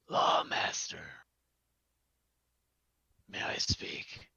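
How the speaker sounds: very raspy, rasping put-on voice. Game master voices a man calling out from the back of a crowd, very raspy voice. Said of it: "a very raspy voice call out from the back".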